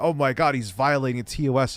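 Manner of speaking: ordinary talk, nothing marked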